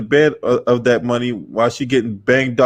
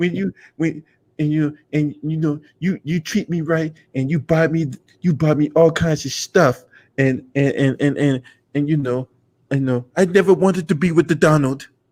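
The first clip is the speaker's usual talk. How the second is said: put-on Slovenian accent, pitched higher; 4 semitones higher than usual. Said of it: "talking shit about Trump in her Slovenian voice".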